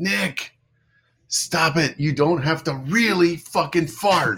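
high-pitched, shouted scolding yell. Retelling being yelled at by Goldie in the tunnel: imitating Goldie yelling. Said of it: "Goldie yells at me and she goes".

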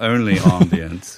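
slow, mock posh British accent.

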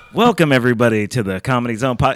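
very loud, booming, too loud, running hot into the mic. Opening the podcast with a welcome, too loud on the mic. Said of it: "I still went hot with it".

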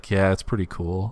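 muttered under the breath. Retelling a film scene where a character replies: imitating saying under breath. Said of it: "kinda says under his breath".

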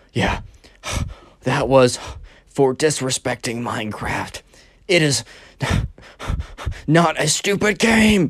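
put-on panting, out-of-breath child voice. Retelling a kid's words after a short run: imitating a kid out of breath. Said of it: "the panting sounds were 'cause the Minecraft kid was out of breath".

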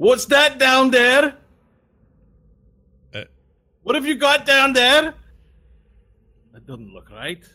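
calling out loudly. Voicing someone shouting down from up top at an elevator: shouting from up top. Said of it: "You hear sort of shouting".

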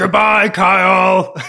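puppet-like voice with a bubbling sound in throat. Quoting his famous goodbye to Kyle, in a Muppet-y voice with a bubble in the throat. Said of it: "very kind of Muppet-y, he has like a bubble in his throat".

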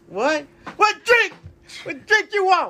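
very high, shrill, angry shouting. Retelling a barbecue order, the speaker is imitating a man yelling. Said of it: "the man is yelling at me".

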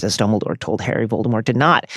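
normal talking voice

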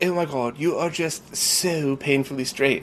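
put-on heavy, thick, laid-on British accent. Speaker quotes a friend of theirs, in a thick British accent. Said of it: "just thick British accent".

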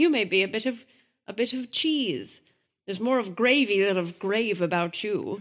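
loud, terrible fake English accent. Two hosts trading silly lines for listeners: terrible fake english accent. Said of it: "survived our terrible English accents".

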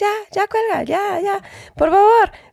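high, shouted pleading at the top of the voice. Retelling how a husband being hit yelled at her to hang up: retelling shouted begging. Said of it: "marido gritándome".

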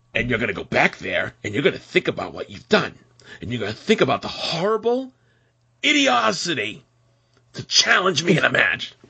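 put-on angry parent voice. Recapping Malachi's threat to Brock, mock-angry dad voice. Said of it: "he sounded like a dad who was angry at his child".

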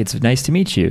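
plain

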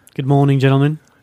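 put-on, fake-sounding British accent. Greeting the others on returning from a trip to London: put-on British accent. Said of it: "somebody's got the British accent all of a sudden".

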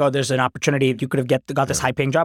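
ordinary delivery

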